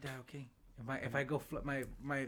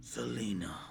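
dramatic 90s movie-trailer announcer voice; 4 semitones lower than usual. Recalling 90s movie announcers, speaker announces [name] in a 90s movie announcer voice. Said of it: "You know those people that used to announce the movies from the 90s? Be like".

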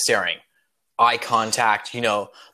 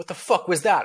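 hammed-up, swooping, wide-swinging put-on movie-star voice, full swagger; 7 semitones higher than usual. Acting out the captain hearing a bird squawk: Sean Connery voice. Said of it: "Sean Connery voice".

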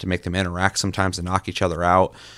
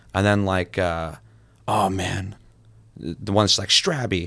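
ordinary talk, nothing marked

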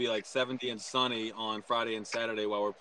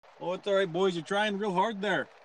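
put-on, pitched-up British accent; 9 semitones higher than usual. Speaker acts out a reply to others' praise: put-on accent. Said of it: "that's a pretty good accent there".

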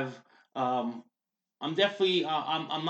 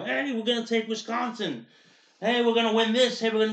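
rowdy, high-pitched, excited sports-crowd style screaming; 7 semitones higher, 3 dB louder than usual. Retelling election coverage people on air: imitating people screaming. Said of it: "screaming like".

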